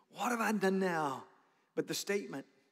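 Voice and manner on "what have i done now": put-on put-upon, protesting kid-brother voice. Retelling the Bible story, acting out David's reply: acting out David's reply. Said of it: "I can just see it".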